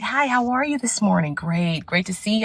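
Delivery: pulled-back, courteous, polite, toned-down voice. Showing how they must talk at work to avoid seeming aggressive: toned-down polite work voice. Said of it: "So I have to pull that tone back".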